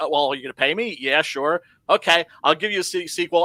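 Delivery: ordinary delivery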